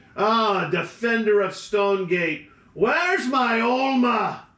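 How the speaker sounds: put-on drunken, drunk-sounding voice. Narrating a scene, a voice calls from the back corner; drunken voice. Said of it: "you hear this drunken voice say".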